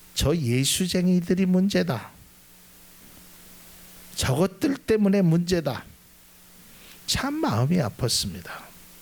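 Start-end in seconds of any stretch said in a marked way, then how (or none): 0.2-5.9 put-on southeastern Korean Gyeongsang regional dialect accent. The speaker quotes what a passerby said, in gyeongsang dialect. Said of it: "경상도 사투리로".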